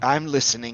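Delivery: hushed, barely-there, very quiet stage whisper. Voicing a drenched character who looks down with angry eyes: very quiet stage whisper. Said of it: "very quiet stage whisper".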